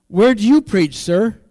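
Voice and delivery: bright, chipper, loud and cheery voice. Speaker retells a store clerk's question to a customer, imitating a cheery voice. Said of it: "in a cheery voice".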